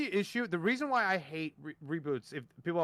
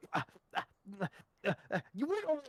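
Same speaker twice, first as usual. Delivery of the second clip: stuttering, halting, stumbling over each uh; 3 semitones higher, 5 dB quieter than usual. Retelling how an opponent kept stuttering, imitating someone stuttering. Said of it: "he kept stuttering".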